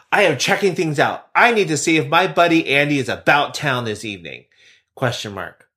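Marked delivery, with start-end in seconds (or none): 0.1-4.4 imitated forceful, strong delivery. Reading a personal ad aloud in the writer's words: imitating a forceful voice. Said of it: "but I'm gonna be very forceful".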